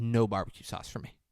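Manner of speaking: ordinary talk, nothing marked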